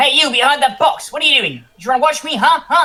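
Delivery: very high, loud, shrill in-character put-on yell. Calling out to hidden watchers from the middle of the street: in-character yell. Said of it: "make sure that I yell loud enough".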